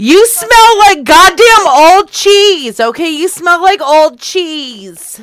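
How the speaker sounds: all-out yell, very loud and high. Insulting the other speaker on a phone call: yelling. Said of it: "why are you yelling at me".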